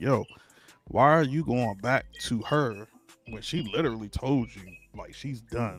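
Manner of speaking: plain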